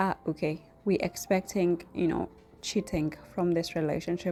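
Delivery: ordinary talk, nothing marked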